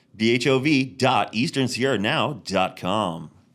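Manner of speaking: on-air announcer voice. Host closing the show, sending listeners to the store website in radio announcer voice. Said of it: "That's my radio voice".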